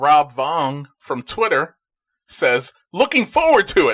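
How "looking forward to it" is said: mock very high, loud, punchy exclaiming. Reading a tweet from Twitter aloud, exclaiming a quoted tweet. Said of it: "You exclaimed it".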